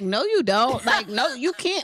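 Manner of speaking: put-on dismissive voice. Retelling a reply to someone asking to join a trip: imitating someone being dismissive. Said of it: "so dismissive".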